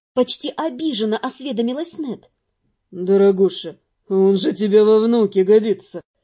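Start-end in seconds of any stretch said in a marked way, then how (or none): 2.9-6.0 dry, low, smirking delivery. A man explains to a mercenary woman, with a smirk. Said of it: "с усмешкой пояснил Алонсо".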